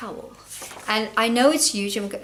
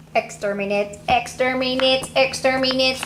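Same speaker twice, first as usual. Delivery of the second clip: robot alien voice, higher pitch; 2 semitones higher, 3 dB louder than usual. Showing podcast listeners a hat decorated with Daleks, in a Dalek voice. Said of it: "I'm being silly".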